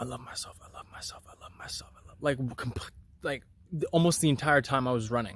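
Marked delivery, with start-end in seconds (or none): 0.0-2.4 mock muttering under breath, much quieter. Recalling repeating affirmations to oneself while running, muttered under the breath. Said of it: "kind of under my breath".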